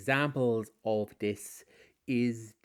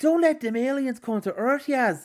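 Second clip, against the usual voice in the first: put-on high, loud, belted-out Scottish accent; 9 dB louder than usual. Imitating Jodie Whittaker speaking to Yaz: Jodie Whittaker impression in Scottish accent. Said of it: "why am I Scottish?".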